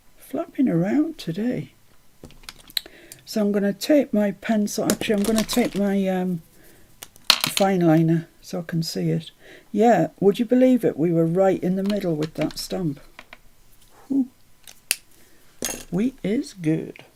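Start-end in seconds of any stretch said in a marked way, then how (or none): 15.9-16.9 slow, drawn-out American accent. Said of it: "That was my American accent".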